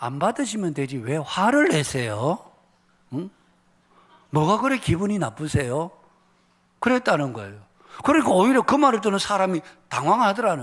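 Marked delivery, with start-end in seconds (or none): 0.0-5.9 firm, no-nonsense, stern, serious tone. Retelling how the leafleter answered the angry youth: imitating a stern straight-faced retort. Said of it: "딱 정색을 하고는".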